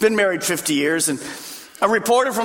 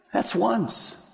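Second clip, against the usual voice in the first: acted hushed murmur, quieter; 5 dB quieter than usual. Telling of a Grand Canyon mule ride, quoting his wife's quiet aside to her mule. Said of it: "I heard her quietly say into the mule's ear".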